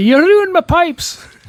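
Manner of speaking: fake Scottish accent, very high pitch. Joking about a friend playing bagpipes on a vacuum: put-on scottish accent. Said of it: "That's more Scottish".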